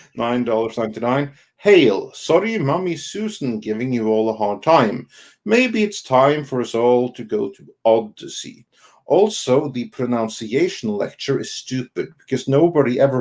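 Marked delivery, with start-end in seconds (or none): none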